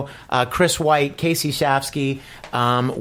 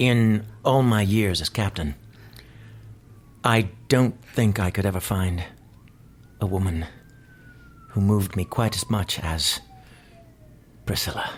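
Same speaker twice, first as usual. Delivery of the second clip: low starship-captain voice, halting; 6 semitones lower, 4 dB quieter than usual. Asked to act on the spot and include another person's name, doing Captain Kirk voice. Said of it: "Give me a line in the Captain Kirk voice".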